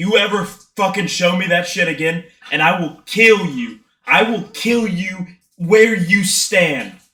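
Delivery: angry tone. After getting shoved, pointing at the other man and yelling angrily. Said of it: "I'm yelling like angrily".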